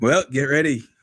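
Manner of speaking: high, shouted yell in a character voice. Calling out a warning to companions in a game: in-character yell. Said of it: "I yell out".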